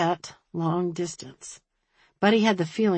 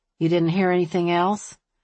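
ordinary delivery

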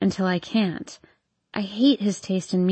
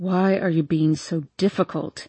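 speaking through gritted, clenched teeth; 3 semitones lower than usual. A man questions the narrator after she refuses him: through gritted teeth. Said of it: "He says through gritted teeth".

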